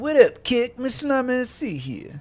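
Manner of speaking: slow, high, swooping cartoonish voice. Asked what his kick voice sounds like, the speaker does a Cartman-like cartoon voice. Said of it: "It's like kind of Cartman, but not Cartman".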